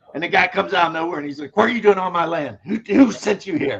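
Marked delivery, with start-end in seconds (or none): 1.6-3.9 rural Kentucky local man's voice. Retelling a comedy sketch, imitating a Kentucky guy. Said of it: "that's how he did the Kentucky guy".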